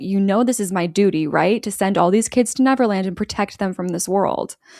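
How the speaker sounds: plain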